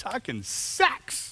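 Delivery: voice leaps up very high, squeaky. Announcing the day's topic of sex talk: voice going higher. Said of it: "Why did your voice go higher".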